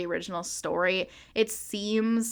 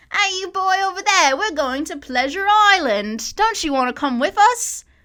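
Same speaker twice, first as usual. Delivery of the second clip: fake British accent, very high, shrill, very loud; 11 semitones higher, 9 dB louder than usual. Demonstrate how annoying he sounded every time he spoke, in a bad british accent. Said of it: "Like that".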